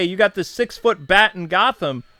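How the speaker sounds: ordinary talk, nothing marked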